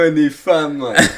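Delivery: exaggerated Welsh accent. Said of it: "do it in your, uh, accent".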